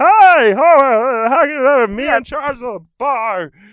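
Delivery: very high, very loud, slow, throaty voice. Showing how a voice sits in the back of the throat: Barney from The Simpsons voice. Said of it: "if you do Barney from The Simpsons".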